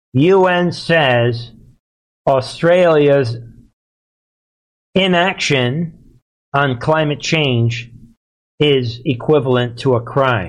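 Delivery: slow, measured, deliberate, word-by-word delivery. Explaining a un statement to an audience who may not get it, speaking slower. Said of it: "So I'm speaking slower".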